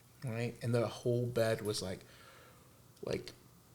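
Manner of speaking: ordinary delivery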